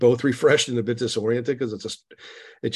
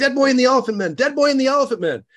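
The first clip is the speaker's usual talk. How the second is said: very high, rapid, shrill, wildly excited yell; 6 dB louder than usual. Retelling how she woke the speaker from a nap: imitating someone yelling excitedly. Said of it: "yelling like that".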